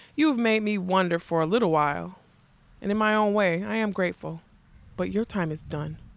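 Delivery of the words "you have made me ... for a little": usual speaking voice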